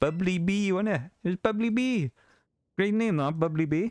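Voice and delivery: fake Welsh accent pitched way up high. Praising a chat name, now in a put-on Welsh accent. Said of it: "Now I talk like normal again".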